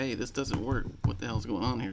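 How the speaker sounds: ordinary delivery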